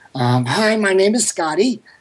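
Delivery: put-on slow, simple little kid character voice. Recalling a character from an improv act, a little fun kid: slow little kid character voice. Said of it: "I used to do this voice in my improv act".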